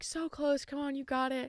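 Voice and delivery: put-on high, encouraging cheering yell. Retelling encouraging other runners during the race: imitating own yelling. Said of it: "I honestly started yelling".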